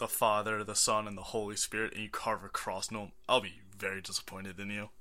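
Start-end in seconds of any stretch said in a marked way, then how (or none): none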